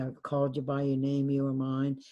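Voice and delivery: ordinary delivery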